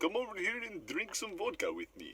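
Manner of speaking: very high, swooping, fake Russian accent. For the accent-of-the-week bit, the speaker tries a put-on Russian accent. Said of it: "That's not bad".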